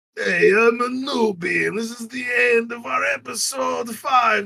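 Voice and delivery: theatrical movie vampire count voice. Doing the episode outro in the voice from the story, in a Dracula voice. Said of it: "Now I just sound like a Dracula".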